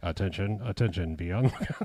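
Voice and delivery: deadpan, flat, monotone professional announcer voice. Imitating a game announcer's line: imitating a deadpan monotone announcer. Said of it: "said in such a monotone, professional way".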